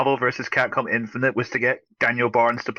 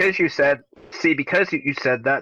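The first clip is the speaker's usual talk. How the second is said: ordinary talk, nothing marked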